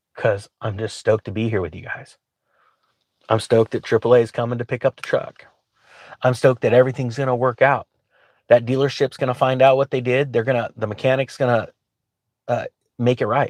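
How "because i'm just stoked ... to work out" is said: tearful voice, choking up and catching. Speaking to the group while waiting for the truck to be picked up, tearing up. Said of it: "I'm I'm tearing up".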